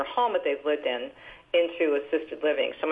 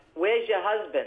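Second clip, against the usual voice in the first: put-on speaking with a New Jersey accent; 4 semitones higher than usual. The speaker quotes her mother's question in her mother's Jersey accent. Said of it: "she'd say in her Jersey accent".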